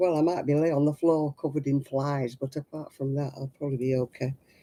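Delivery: ordinary delivery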